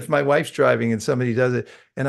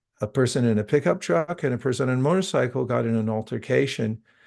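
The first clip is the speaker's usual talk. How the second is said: ordinary talk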